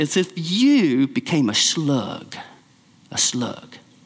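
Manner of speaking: put-on slow, drawn-out South Carolina low country accent. Quoting a professor rattling his class: South Carolinian low country accent. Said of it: "in his South Carolinian low country accent".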